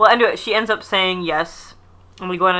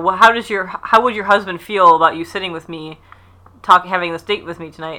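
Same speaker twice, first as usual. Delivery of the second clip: ordinary delivery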